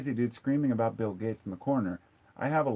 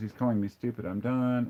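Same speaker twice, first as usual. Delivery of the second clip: plain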